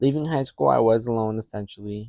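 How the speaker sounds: ordinary delivery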